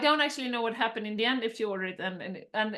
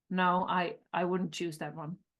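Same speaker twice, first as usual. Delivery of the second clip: put-on serious tone, lower; 4 semitones lower than usual. Retelling a waiter's reply to a customer's order: imitating a waiter speaking seriously. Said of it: "Like, really serious".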